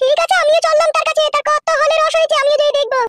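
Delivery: high-pitched woman's voice.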